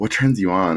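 confiding, hushed, voiced half-whisper, stage whisper style. Retelling what a guy said at the movies: imitating a half-whisper. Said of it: "he whispers in my ear".

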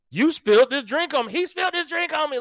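mock angry, high, screaming yell. Retelling a woman who keeps coming back at him; imitating someone screaming. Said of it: "Like she's screaming at this point".

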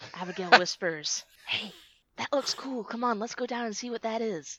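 whispering. A player's character speaks to a companion during a role-play scene, whispering. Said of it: "Abigail whispers".

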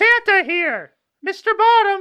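very high, shrill, loud screech. Storyteller voicing Bert as he swoops down: Bert's loud screech. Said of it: "loudly he kind of, like, screeches".

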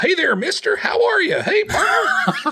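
friendly, cheery yokel cowboy voice, pitched very high. Imitating his game character greeting people in town: friendly yokel cowboy greeting. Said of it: "the friendliest cowboy in the world, some yokel".

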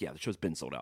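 short, curt, terse New York voice. Retelling what the doorman said at a sold-out show: imitating a terse new york doorman. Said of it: "typical kind of New York terseness".

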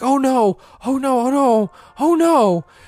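mock very slow, high, drawn-out, mournful panic. Retelling how his wife woke up from a dream: imitating a panicked, sad wife. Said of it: "she wakes up just panicked, but, like, in kind of a sad way".

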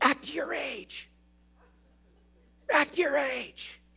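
hushed, forceful, urgent whisper-yell. Retelling a mom in a store scolding her toddler: imitating a whisper yell. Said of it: "she whisper yells".

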